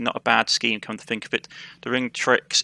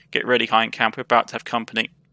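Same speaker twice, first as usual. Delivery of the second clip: ordinary delivery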